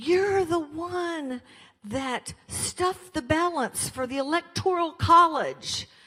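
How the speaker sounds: slow, high-pitched screaming.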